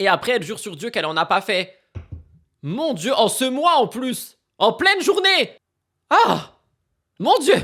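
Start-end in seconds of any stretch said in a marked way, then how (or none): 2.6-7.5 stunned, scandalised exclaiming, high and drawn out. Reacting to a social media post she is reading, shocked. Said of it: "Je suis choquée".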